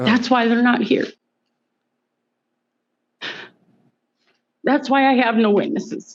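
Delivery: speaking through tears. Answering accusations about the children, crying while talking. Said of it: "You can stop crying".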